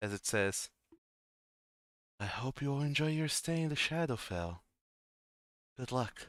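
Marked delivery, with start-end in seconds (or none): 2.2-6.3 very soft voice fading away into the distance. Game master voicing an unseen voice as the players are teleported: very soft, fading voice. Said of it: "a very soft voice, kind of dissipating also into the distance".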